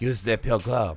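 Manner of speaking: put-on French accent. Redoing a movie line after being told to use the right accent: Lambert's French accent. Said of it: "you gotta do the right accent".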